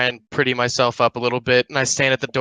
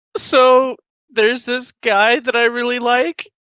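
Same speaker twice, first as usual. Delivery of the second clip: very high-pitched, bawling, sobbing wail; 11 semitones higher, 4 dB louder than usual. Playing a character who sits on the bed, confiding to her: bawling. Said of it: "and I'm just bawling".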